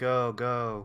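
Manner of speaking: flat monotone, unlike own voice. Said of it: "Just in that very monotone voice".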